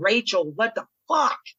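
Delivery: mock, toned-down, mild yelled outburst. Retelling being hurt during a wrestling match: imitating own scream.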